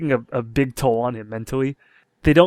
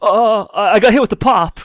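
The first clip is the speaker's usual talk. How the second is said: loud, high, drawn-out line reading; 7 semitones higher, 6 dB louder than usual. Retelling how an actor delivered a line in the movie: Nicolas Cage impression. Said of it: "The way Nicolas Cage delivered all of his lines".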